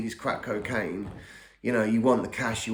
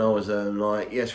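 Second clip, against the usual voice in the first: plain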